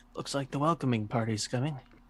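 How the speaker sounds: low-key, hushed, quiet delivery. A character raising his rifle toward an approaching group speaks to the others, quietly. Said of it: "just kind of says to the others quietly".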